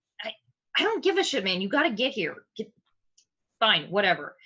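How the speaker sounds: irate, fed-up, angry, swooping rant. As the group pulls up, the gnome on the phone speaks, angry. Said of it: "He he is very clearly uh not happy".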